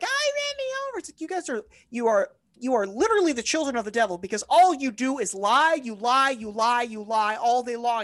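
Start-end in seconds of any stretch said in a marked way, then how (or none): 0.0-1.0 frantic, very high shrieking scream. Acting out people run over by a truck, imitating people screaming. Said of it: "Everyone's screaming".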